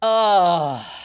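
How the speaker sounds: play-acted, booming, very loud, drawn-out disappointed crowd groan. Retelling a whole theatre reacting to an announcement: imitating a disappointed crowd. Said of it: "you just heard everyone in the theatre go".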